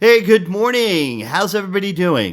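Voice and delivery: upbeat, loud, energized delivery. Speaker demonstrating how to greet a room or answer the phone, energetic greeting. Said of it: "Take that energy and bring it into the room".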